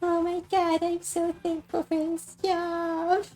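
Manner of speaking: acted crying, tearful speech. Retelling own reaction on stream when wistful: imitating own crying. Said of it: "crying and going".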